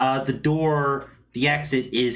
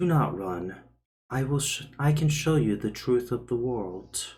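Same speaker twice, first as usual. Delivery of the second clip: eerily courteous, calm, even, oddly creepy voice; 4 dB quieter than usual. Voicing something heard inside a character's head: calm, polite, oddly creepy voice. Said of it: "a very calm, polite, and but oddly creepy voice".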